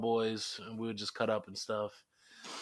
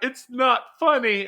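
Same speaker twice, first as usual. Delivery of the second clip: very high, very loud tearful wailing sob; 13 semitones higher, 12 dB louder than usual. Retelling how she cried when people started looking, imitating someone crying. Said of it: "She starts crying".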